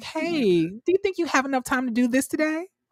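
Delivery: high, condescending, passive-aggressive, overly nice tone. Describing how he'll act after ranking up at work, talking condescending. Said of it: "I'm gonna be very condescending".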